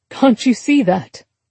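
ordinary delivery

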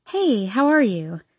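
plain

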